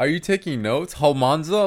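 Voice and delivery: mock pointed, needling, passive-aggressive tone. Imitating a woman who squints hard when mad, in a mock passive-aggressive tone. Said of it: "She has that passive aggressive tone".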